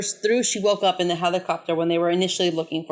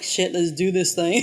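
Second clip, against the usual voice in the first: usual speaking voice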